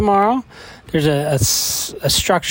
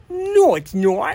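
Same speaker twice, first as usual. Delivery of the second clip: put-on, pitched-up Boston accent; 7 semitones higher than usual. Showing how a word is answered at dinner time, in a boston accent. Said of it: "So say the word in a Boston accent".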